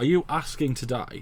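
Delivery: ordinary delivery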